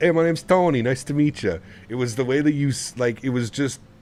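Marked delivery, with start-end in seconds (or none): 0.0-1.6 loud, high put-on New York Italian accent. Recounting the ride home, quoting Joe doing his New York accent. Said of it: "Joe does an incredible New York accent".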